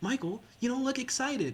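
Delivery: put-on gushing, excited, high sing-song voice. Retelling what a friend said on hearing job news: imitating an excited friend. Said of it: "she got so excited".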